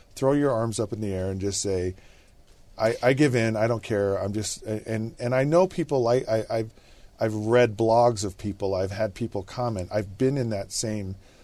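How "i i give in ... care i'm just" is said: ordinary talk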